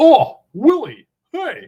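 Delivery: very high, very loud, shrill, swooping alien voice. Doing an impression of a fuzzy alien character from a classic show: ALF impression. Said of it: "this is my Alf".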